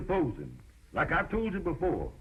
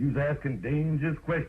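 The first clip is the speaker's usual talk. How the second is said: ordinary delivery, nothing marked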